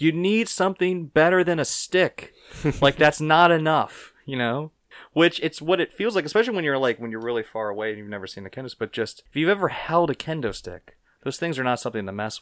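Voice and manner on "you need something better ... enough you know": mock frantic, high, hysterical yelling, over and over. Retelling a woman shouting at a wrestler at a show, imitating someone yelling. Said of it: "she just keeps yelling".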